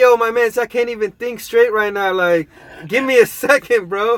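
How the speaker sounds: high, flustered, can't-think-straight voice. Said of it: "I'm like".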